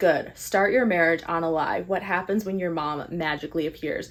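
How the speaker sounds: plain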